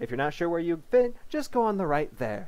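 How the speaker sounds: loud, high-pitched officer voice, calling out. A company settlement officer directs a horde of zombies into two queues: loud, high-pitched officer voice. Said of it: "My name is [name], and I'm the company settlement officer. ... her voice loud and high-pitched enough to make the maggots in my eardrums wriggle crinkly".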